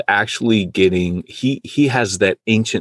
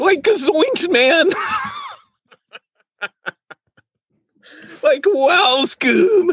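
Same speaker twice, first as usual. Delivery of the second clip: very high, sing-song cartoon voice, swooping all over. Trying a Shaggy voice as a joke, then giving up: Shaggy voice. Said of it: "I used to be able to do a great Shaggy".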